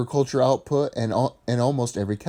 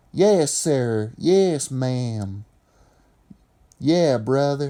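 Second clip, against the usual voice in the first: southern Appalachian accent; 2 semitones higher than usual. Explaining how Appalachian farm folk spoke, then demonstrating: southern Appalachian dialect. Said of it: "They would speak like this".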